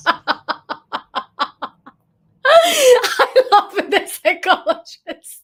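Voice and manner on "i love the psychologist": high-pitched, gushing speech with laughter. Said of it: "I'm, I'm laughing here myself".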